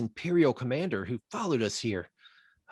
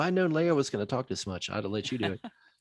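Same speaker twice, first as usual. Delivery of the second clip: ordinary talk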